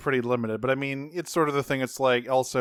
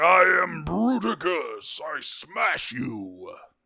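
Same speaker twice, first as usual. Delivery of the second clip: very slow, drawn-out big dumb robot voice; 5 semitones higher than usual. Praising a cartoon combiner's voice, doing Bruticus voice. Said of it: "he sounded like a big dumb giant robot".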